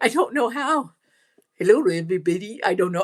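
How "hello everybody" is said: tentative, attempted Indian accent. Greeting everybody after being asked for an indian accent, attempted indian accent. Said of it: "With an Indian accent".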